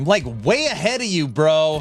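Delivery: half-shouted, mild yell. Answering Aaron in a group conversation, yelling. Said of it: "Sorry for yelling".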